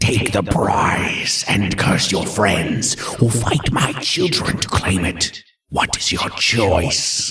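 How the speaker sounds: snarling voice sounding disembodied, from nowhere. Game master voicing a voice in Douglas's head, snarling disembodied voice. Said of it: "you hear a snarling, disembodied voice in your head say".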